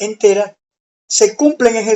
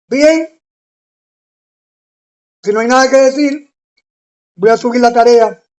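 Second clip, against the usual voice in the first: talking with mouth full, chewing; 2 semitones higher than usual. Greeting viewers while snacking on peanuts, talking while chewing peanuts. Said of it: "Estoy hablando así porque estaba masticando maní".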